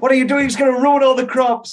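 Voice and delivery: mock very loud, very high, shrill snapping. Describing the dad character finally snapping, imitating a dad snapping. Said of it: "And then when he finally snaps".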